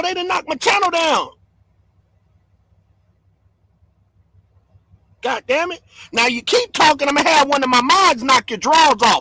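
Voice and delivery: furious, fed-up, angry, mad-as-hell rant. Talking to viewers on a channel, angry. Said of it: "I'm mad as hell".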